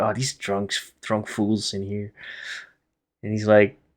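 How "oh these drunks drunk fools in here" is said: very quiet, weary, exasperated grumble and sigh. Voicing a tavern owner who sighs at the drunks: sighing, exasperated. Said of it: "He just sighs and goes".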